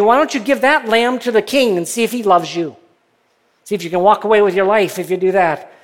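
put-on sarcastic taunting tone. Retelling what some prophets said, retelling a sarcastic taunt. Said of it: "said kind of sarcastically".

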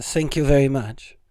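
comic stage character with put-on foreign accent. Recalling a comedy hero's stage voice: Andy Kaufman Foreign Man voice. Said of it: "He talked like that".

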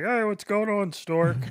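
very high, loud puppet-frog voice. Retelling a manager's greeting to him, in a Kermit voice. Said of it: "The one manager had the Kermit voice".

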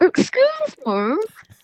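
tiny, very high, muffled small voice. Retelling a trapped man calling from inside a prop: little muffled voice. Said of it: "this little muffled voice saying".

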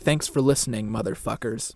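whispered growl. A podcast host demonstrates the show's sign-off to a co-host, whispered growl. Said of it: "whisper and growl".

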